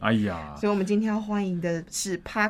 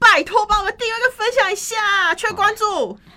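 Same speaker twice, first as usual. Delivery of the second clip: shouting loudly; 12 semitones higher, 5 dB louder than usual. Asking listeners to subscribe and share the show: shouting loudly. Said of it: "从来没有喊这么大声".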